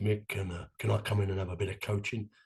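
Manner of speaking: deep, low-pitched voice. Retelling a friend asking at the door for coaching: imitating Pat's deep voice. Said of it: "He went in his deep voice".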